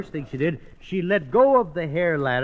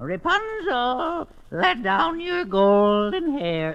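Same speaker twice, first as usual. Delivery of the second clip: high put-on storybook witch voice; 8 semitones higher than usual. Telling Rapunzel, the narrator voices the witch calling up the tower: put-on witch voice. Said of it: "Just use your own voice, Bergen".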